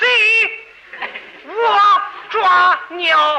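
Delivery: Henan dialect accent. In a crosstalk routine, showing how a Henan speaker answers the door, Henan dialect accent. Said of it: "河南话".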